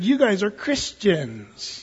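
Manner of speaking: scornful, mocking, sneering contemptuous tone, swooping pitch. Quoting those who hated early christians, in a mock-contemptuous derogatory tone. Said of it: "you say that with kind of a weird attitude. Yeah. It was a derogatory term".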